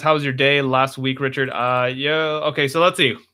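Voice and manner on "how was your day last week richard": plain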